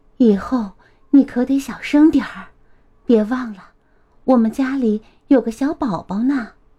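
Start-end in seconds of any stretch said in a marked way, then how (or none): none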